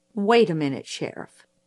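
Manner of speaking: usual speaking voice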